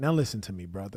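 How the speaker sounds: condescending, belittling, demeaning tone. Retelling another speaker's reply to a debater: imitating a condescending tone. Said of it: "demeaning tone and condescending tone".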